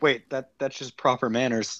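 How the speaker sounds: ordinary talk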